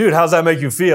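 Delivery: ordinary talk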